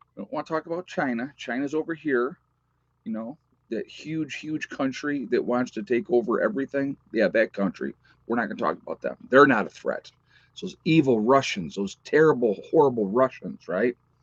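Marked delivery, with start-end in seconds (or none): none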